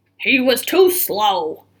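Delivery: growling, gruff cowboy voice. Narrator reading one cowboy's line in a story, growly voice. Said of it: "a growly voice said".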